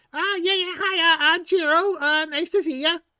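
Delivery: very high-pitched kobold character voice. Voicing a kobold introducing himself to the party: Jiro the kobold voice. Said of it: "this kobold face emerges".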